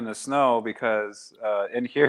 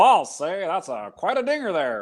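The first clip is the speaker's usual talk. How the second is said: put-on old-fashioned radio announcer voice, faster; 8 semitones higher than usual. Mocking how every man on old recordings sounded, in an old-timey announcer voice.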